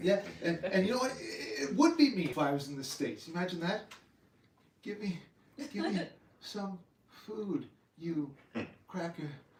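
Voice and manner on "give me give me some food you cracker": put-on weakness, feeble, halting, broken up, soft. Joking with others about his voices, feigning weakness from hunger. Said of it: "feigning weakness from hunger".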